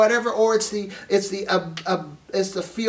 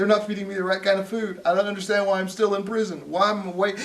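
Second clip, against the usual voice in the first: play-acted sobbing, pitiful, whiny crying voice. Imitating jailed rioters crying about going home: imitating rioters crying. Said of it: "look at 'em now crying".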